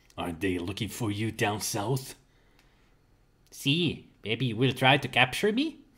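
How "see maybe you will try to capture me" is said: awful, laid-on put-on Spanish accent. Voicing the Mexicali Kid answering a challenger, bad Spanish accent. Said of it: "my Spanish accent is awful".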